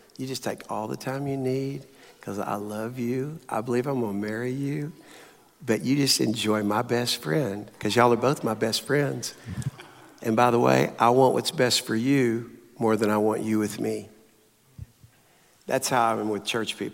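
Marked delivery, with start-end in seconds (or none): 0.2-14.1 imitated whisper. Retelling what he whispered in her ear: retelling a whisper. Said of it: "I whispered this in her ear".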